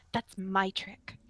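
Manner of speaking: grumbling, muttered half under the breath. Narrating a scene, voicing a character after her sword vanishes, muttering under breath. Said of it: "She like mutters under her breath".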